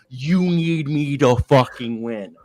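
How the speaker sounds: very slow, high, drawn-out, acted-out scream. Retelling how a player screamed at a teammate, imitating Jimmy Butler screaming. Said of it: "he was screaming at Andrew Wiggins and shit and yelling".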